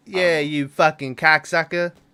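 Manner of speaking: put-on Boston accent. Asked to retell the bar scene in a Boston accent: put-on Boston accent. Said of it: "Do a Boston".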